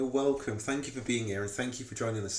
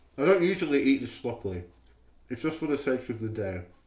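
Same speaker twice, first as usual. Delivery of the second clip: speaking with mouth full, much louder; 4 dB louder than usual. Speaker eats a dip while talking, with food in mouth. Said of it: "I also don't usually talk with food in my mouth".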